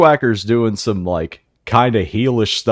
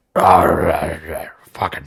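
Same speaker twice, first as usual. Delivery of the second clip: put-on old man promo voice, lower; 5 semitones lower than usual. Imitating how Vince McMahon talked, the impression everybody does: Vince McMahon impression. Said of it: "impression that everybody does".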